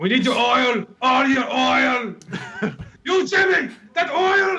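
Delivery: put-on speaking with Middle Eastern accent. Play a robot chasing a kid in the back of the room, in a put-on Middle Eastern accent. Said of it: "I went all fucking Middle Eastern there".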